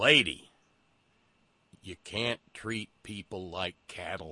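acted, low, bone-dry deadpan with no inflection. Retelling a scene where Walter Matthau answers an unhelpful woman, Walter Matthau's deadpan delivery. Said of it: "deadpan says".

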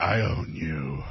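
very low, hushed, creepy rich-uncle voice. Imitating a man the friends find creepy, creepy rich Uncle Moneybags voice. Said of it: "a rich Uncle Moneybags creepy voice".

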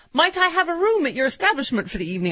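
put-on high, old-fashioned formal telephone voice.

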